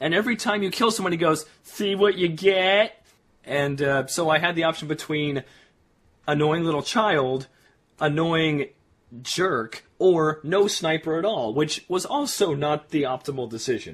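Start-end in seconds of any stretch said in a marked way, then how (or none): 1.6-3.0 smug, gloating taunt, loud and drawn out. Describing a game's older male sniper who taunts after kills, imitating a jerk's taunt. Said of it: "he's a dick".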